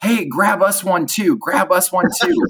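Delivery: very high shout, yelled from afar. Retelling a group calling down from across the park: imitating a yell. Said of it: "they yelled down".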